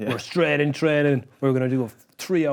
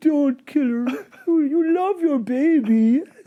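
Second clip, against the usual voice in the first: put-on sad voice, much higher and louder; 13 semitones higher, 4 dB louder than usual. Retelling a TV episode scene, imitating Tyrion's sad voice. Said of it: "he just put on a sad voice".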